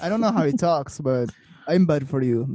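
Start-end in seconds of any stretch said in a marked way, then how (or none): 1.7-2.5 put-on Serbian-accented speech. Retelling a player's reply to others, the speaker imitates him in a put-on Serbian accent. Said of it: "That was a really good Serbian accent".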